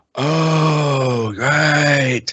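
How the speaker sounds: mock dim-witted voice. Telling a story about a sketch dispute, quoting the reply, imitating Steven Seagal as dim-witted. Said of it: "like an idiot, goes".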